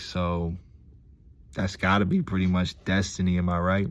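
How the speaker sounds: ordinary delivery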